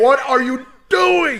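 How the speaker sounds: mock scream, very high-pitched and loud. Retelling watching a game and screaming at the tv: imitating own screaming. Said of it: "I was screaming at the T V".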